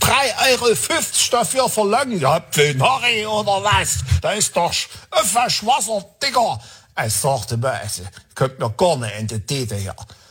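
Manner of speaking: heavy Saxon dialect, complaining tone.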